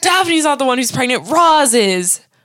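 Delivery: high, indignant, blurted outburst. Retelling a TV scene where Frasier scolds Niles: imitating Frasier yelling. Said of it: "Frasier yelling".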